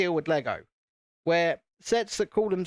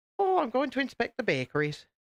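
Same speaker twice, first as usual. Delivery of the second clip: terrible put-on Irish accent, pitched up; 6 semitones higher than usual. Acting out a quick line, then calling it bad: terrible irish accent. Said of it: "That was a terrible Irish accent".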